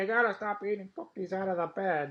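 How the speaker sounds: puppet-style character voice. Joking with the other speaker about Bert and Ernie, in an Ernie voice. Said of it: "This is Ernie".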